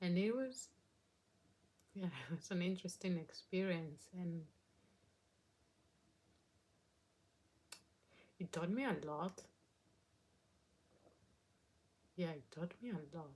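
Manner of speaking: emotional voice, on the verge of crying. Recalling volunteering in Carcassonne in southwest France: getting emotional. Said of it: "Getting emotional again".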